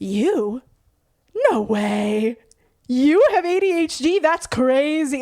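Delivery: play-acted heavy sarcasm, very slow, way stretched. Retelling how friends answered a question about having ADHD: imitating over-the-top sarcasm. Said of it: "so over the top sarcastic with it".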